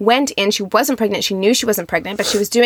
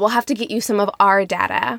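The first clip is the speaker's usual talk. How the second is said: put-on cackling woman voice. Retelling a woman's reply in a video while imitating her cackle. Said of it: "this is where she cackles".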